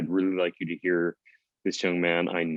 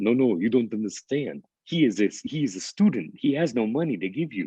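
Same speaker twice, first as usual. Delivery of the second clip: put-on everyday Brooklyn-accented speech; 4 semitones higher than usual. Retelling his father answering a caller on the phone, in a Brooklyn accent. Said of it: "he proceeded to say to her in his Brooklyn accent".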